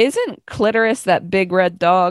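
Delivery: ordinary delivery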